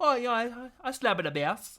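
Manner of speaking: botched reggae voice, high, loud leprechaun lilt. Repeating back a man's attempted reggae voice about playing bass: failed reggae voice, leprechaun-like. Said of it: "Why do you sound like a leprechaun?".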